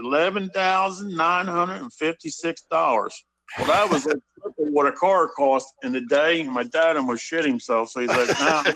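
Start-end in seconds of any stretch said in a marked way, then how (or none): 0.0-3.1 put-on Southern accent. Retelling a phone call about buying a car, imitating Treadway's Rebel accent. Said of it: "with that Rebel accent".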